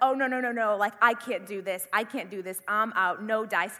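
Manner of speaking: mock losing it. Speaker retells freaking out behind Derek near the rats, retelling panicking. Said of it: "I just begin to really lose it".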